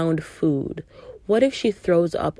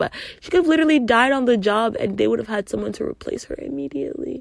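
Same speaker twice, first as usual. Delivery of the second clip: getting emotional, higher pitch; 6 semitones higher than usual. Recounting how a woman was treated at her job, getting emotional. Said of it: "I'm getting emotional thinking about it".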